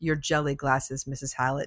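deadpan, dead-even, flat monotone delivery. Quoting a 13-year-old girl's line after she is slapped: flat monotone. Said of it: "Just so monotone".

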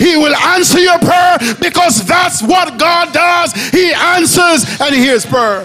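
loud preacher-style delivery. Preaching that god hears and answers prayer: loud preaching. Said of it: "Sorry to be loud".

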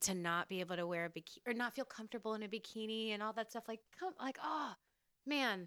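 moved, emotion building as it goes. Speaking to a co-host about moms after pregnancy, getting emotional. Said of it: "I'm like actually getting emotional".

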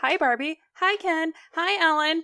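high, bright, chirpy doll-like voice.

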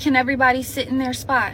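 ordinary delivery

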